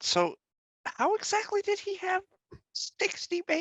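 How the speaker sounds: hushed, very high, slow, drawn-out whisper. Walking over to Mama Bear in character and asking her a question: whispering. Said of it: "just whisper".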